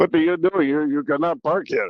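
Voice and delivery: man's voice in a put-on European accent. Speaker retells a man coming up to the driver's window, in a put-on european accent. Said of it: "you got a little European accent".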